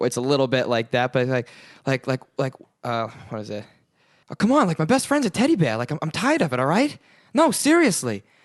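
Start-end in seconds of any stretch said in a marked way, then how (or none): 4.3-8.2 breathy, pitched-up voice with swooping pitch. Doing the Mark Wahlberg impression the speaker calls pretty good: Andy Samberg's Mark Wahlberg impression. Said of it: "the Andy Samberg Mark".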